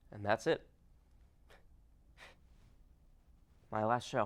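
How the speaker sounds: emotional, choked-up voice. Signing off at the end of a last show: getting emotional. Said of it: "I'm getting emotional".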